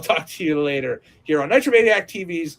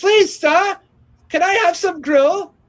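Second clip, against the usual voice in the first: very high, put-on British orphan accent, raised voice; 5 dB louder than usual. Describing a role as a small boy in a straw hat: full british orphan voice. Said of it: "you went full British orphan".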